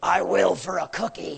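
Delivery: low, deep, rough growling spirit voice. Retelling a spirit's reply when ordered to come out of her, deep growling voice. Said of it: "a deep growling voice said".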